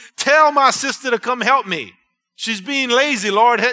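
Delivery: very loud, high, irritated, annoyed voice. Speaker acts out a woman complaining to the Lord about her sister, acting out a mad tone. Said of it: "Can't you hear her tone?".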